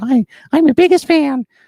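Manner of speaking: very high, loud, nervous squeak. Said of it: "my voice got really high".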